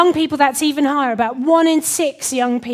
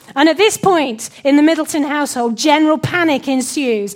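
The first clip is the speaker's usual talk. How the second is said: plain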